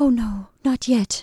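stammering with fear. A frightened woman pleads with a man making up the berths, stammering with fear. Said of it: "she stammered".

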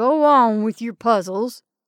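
loud, mocking, jeering taunt. Narrator reads a man answering a woman's warning about Wild Water, jeering. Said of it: "he jeered".

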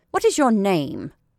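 imperious tone. Lottie questions a half-frozen child who came to sell things, peremptory. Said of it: "she asked peremptorily".

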